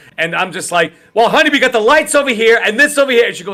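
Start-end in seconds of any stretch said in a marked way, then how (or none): 1.2-3.3 high, yelled, acted-out plain everyday talk. Retelling talking to his wife about the lights: retelling own yelling. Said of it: "Why are you yelling?".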